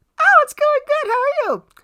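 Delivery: very high, put-on girl's voice. Retelling a text exchange with a girl, voicing her replies, imitating a girl's voice. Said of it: "and this this is her voice".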